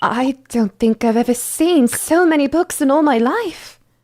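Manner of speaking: put-on British accent. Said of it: "I've done a British accent in a while".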